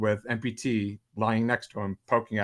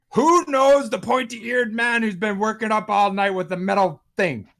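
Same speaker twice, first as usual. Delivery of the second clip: very high, loud, bellowing dwarf voice; 12 semitones higher, 6 dB louder than usual. Narrating a scene, a dwarf calls out to the gathered people: bellowing dwarf voice. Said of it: "a bellow as a dwarven voice goes".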